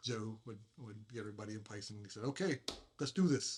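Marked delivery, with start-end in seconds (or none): 2.2-3.6 put-on slight Italian accent, raised and high. Recalling the assistant director starting each scene, in Joe's Italian accent. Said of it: "In his little Itali- Italian accent".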